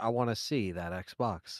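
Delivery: very slow synthetic text-to-speech voice. Repeating a donation message just read out: imitating the ai voice. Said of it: "I like how he sounded too. He's like".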